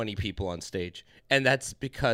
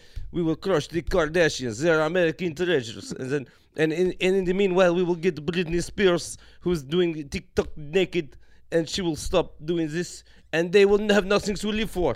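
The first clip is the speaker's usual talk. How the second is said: fake rolled-R accent, higher and louder; 7 semitones higher, 5 dB louder than usual. Riffing in a group conversation about how languages sound, in a mock foreign accent with rolled r's. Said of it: "It's the rolling of the R's".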